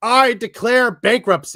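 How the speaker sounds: loud, high shout, yelled out to everyone. Recalling an episode of The Office, speaker quotes its boss, retelling Michael Scott's shout. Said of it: "goes out of his office and just shouts".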